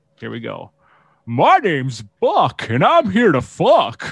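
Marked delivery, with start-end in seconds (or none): 1.3-4.1 stretched out, high and sing-song. Speaker does a famous line in a cartoon character's voice: Goofy voice. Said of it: "I was trying to do my best Goofy".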